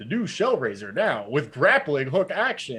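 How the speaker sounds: loud, high nineties toy commercial announcer voice. Remembering a childhood toy ad, quoting its announcer: nineties toy commercial announcer voice. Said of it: "that very distinct like nineties toy commercial announcer voice".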